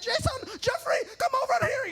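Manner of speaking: very high, terrible put-on Indian accent. Quoting his mom calling jason and jeffrey over, in a terrible indian accent. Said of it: "That's my terrible Indian accent".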